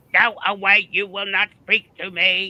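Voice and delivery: loud, high mechanical flat voice. Repeating the Dalek for the viewers: Dalek voice. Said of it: "Was my Dalek okay?".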